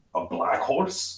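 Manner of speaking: flat, breathy, whispered character voice. Showing how the character Arvin would say it: Arvin's voice. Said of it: "in his voice".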